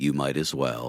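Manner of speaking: very deep, low, gravelly, defeated smoker's rasp. Pitching an imagined new Taco Bell slogan, in a defeated gravelly smoker's voice. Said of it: "very baritone, gravelly, three-pack-a-day smoker's voice going".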